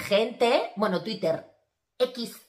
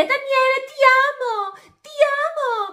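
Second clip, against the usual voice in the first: mock very high, slow, drawn-out desperate cry; 5 dB louder than usual. Retelling how Oriana cried out to Daniele while others calmed her, mimicking Oriana's desperate shout. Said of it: "Y empieza a gritar así".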